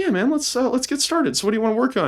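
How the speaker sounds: put-on squeaky, very high, quick little child's voice. Retelling how they talked to a little kid, in a put-on little kid voice. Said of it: "I put on my little kid voice".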